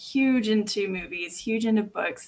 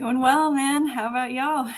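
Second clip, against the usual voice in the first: unmistakably strong Texan accent, pitched up; 5 semitones higher, 3 dB louder than usual. Guest answering the host's greeting on stage, in a very texan accent. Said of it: "that's very Texan".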